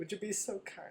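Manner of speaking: whispered, hushed, breathy put-on British accent. Answering a question about a polite murder request: British accent. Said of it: "With a British accent?".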